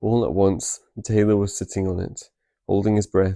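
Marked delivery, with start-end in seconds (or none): none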